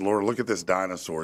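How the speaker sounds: usual speaking voice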